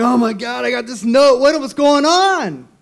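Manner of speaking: frantic, loud, very high-pitched outburst. Retelling a phone call to a lawyer's assistant: imitating his own frantic call. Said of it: "So I'm calling frantic".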